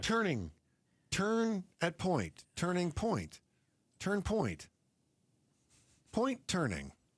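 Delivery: machine-like navigation-system announcer voice. Joking about street names that would confuse GPS: imitating a GPS voice. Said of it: "Thank goodness you are not my G P S's voice".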